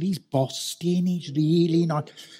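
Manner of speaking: put-on drawn-out Dudley accent. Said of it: "If you want to hear it in the raw, you need to go to somewhere like Dudley".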